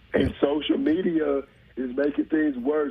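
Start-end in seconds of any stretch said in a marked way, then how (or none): none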